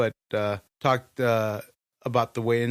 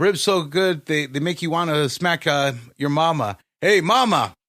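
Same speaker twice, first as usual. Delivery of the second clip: put-on raised, high-pitched elderly man voice; 5 semitones higher, 6 dB louder than usual.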